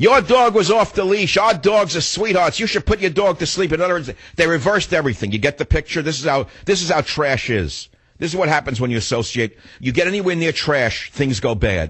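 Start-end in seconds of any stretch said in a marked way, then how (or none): 0.0-3.7 loud scream. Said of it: "they scream at me".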